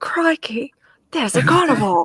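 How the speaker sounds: high, put-on Australian accent. Mid-conversation, suddenly doing a Steve Irwin impression. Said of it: "don't judge my Australian accent".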